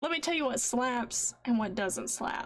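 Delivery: plain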